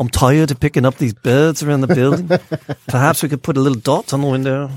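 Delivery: British English accent. Commenting on a news piece about birds and windows, in a british accent. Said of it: "why you're doing British accents".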